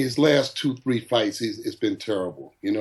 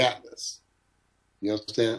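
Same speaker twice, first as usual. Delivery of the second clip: ordinary delivery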